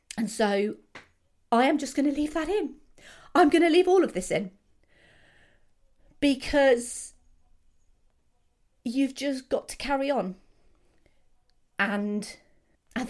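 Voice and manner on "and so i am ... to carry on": tearful voice while talking, higher. Speaking about a film that fills them with joy and sadness, crying while talking. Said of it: "Thank you for listening to me cry".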